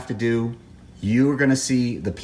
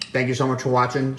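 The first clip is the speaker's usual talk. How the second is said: talking while chewing, mouth full of food. Video host thanking viewers for watching, talking while chewing. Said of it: "Sorry that I'm chewing in your ear".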